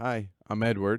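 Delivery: ordinary talk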